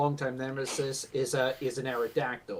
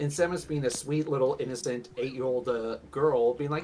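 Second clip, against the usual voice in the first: usual speaking voice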